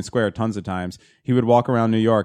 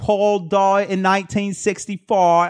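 put-on over-the-top British accent, higher; 9 semitones higher than usual. Joking around with friends: exaggerated English accent. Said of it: "going as far as I can with my English accent".

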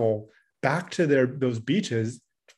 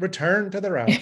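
sharp, fed-up sat-nav voice, raised pitch; 5 semitones higher than usual. Joking about navigation assistant scolding a driver: imitating annoyed navigation voice. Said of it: "That annoyed voice".

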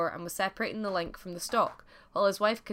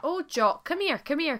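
eager calling out, pitched up, very slow; 8 semitones higher than usual. Cooking at the fire, a wife calls to her husband in the corner: crying out. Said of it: "cried the wife".

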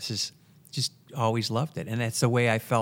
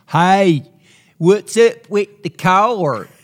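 very loud, very slow, thick hillbilly drawl; 8 semitones higher, 14 dB louder than usual. Retelling a story, speaker does Mitch's thick hillbilly accent. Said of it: "his really thick hillbilly accent".

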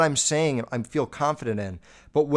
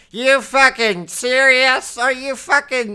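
mock awful screaming voice, higher and louder; 11 semitones higher, 7 dB louder than usual. Mocking the screaming woman being discussed: imitating her awful screaming voice. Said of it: "that's just a bad voice".

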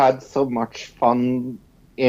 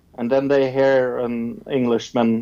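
ordinary talk

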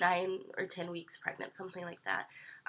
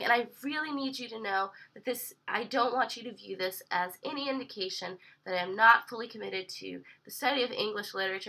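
normal talking voice

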